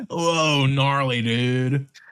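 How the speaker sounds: Californian accent. The speaker jokes about how Californian their mind has become, in a Californian accent. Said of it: "It's not even a Californian accent".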